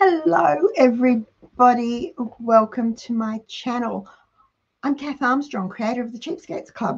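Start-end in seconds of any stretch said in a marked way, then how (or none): 0.0-5.7 hoarse, croaking, croaky voice. Welcome everybody to your channel and introduce yourself in a croaky voice. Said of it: "with a croaky voice".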